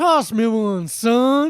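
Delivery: exaggerated put-on Texan drawl, very slow, drawn out. Quoting a movie dad's line: imitating an over-the-top texas accent. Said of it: "unbelievably over the top Texas accent".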